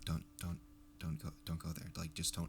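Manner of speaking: very quiet, hushed, insistent whisper. Telling the other host on a show not to go there; whispering. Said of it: "Why are you whispering to me right now?".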